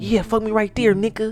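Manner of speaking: high, girlish, mock young girl's voice. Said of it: "the girl calling me".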